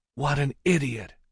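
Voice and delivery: high hiss from the corner of the mouth. Stalking away with Tyrone hurrying to keep up, she speaks: hissed from corner of mouth. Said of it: "she hissed from the corner of her mouth".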